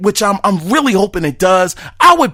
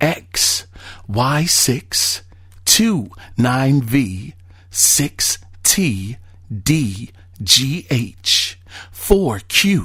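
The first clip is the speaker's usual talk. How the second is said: secretive, hushed, soft whisper; 7 semitones lower, 6 dB quieter than usual. Reading out the P.S. of a message with a code, whispering like Mark Cerny. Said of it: "he wants me to whisper this".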